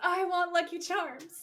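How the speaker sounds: put-on high, spoiled, insistent, bratty little-kid voice. Retelling a TV scene, quoting young Sam: imitating a bratty kid. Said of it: "being kind of a brat at this point".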